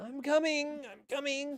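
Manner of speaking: faint, very high-pitched voice sounding from far off. Narrator voicing someone answering from behind a locked door: faint distant voice. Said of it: "you hear kind of a faint".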